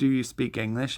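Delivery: ordinary delivery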